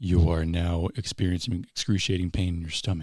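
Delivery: mock whispered words. Retelling what the conductor said to a frozen performer: imitating a whisper. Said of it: "he would whisper, uh, words to you".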